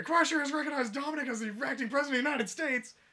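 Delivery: very high, loud, full-throated shriek. Retelling a story where a character reads the news: imitating a scream. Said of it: "she just screams".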